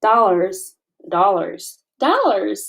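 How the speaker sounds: put-on American accent on the word dollars. Practising the word dollars in an accent: flat American accent. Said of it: "I have to make my voice so flat to do my American accent".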